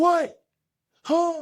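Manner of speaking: very high, loud, startled voice. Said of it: "that was a really good impression of your dad".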